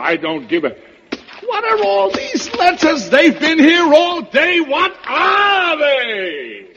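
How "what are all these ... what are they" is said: very high, shrill, swooping, rising shout. Breaking off mid-rant to question another speaker, shouting. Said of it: "Stop shouting".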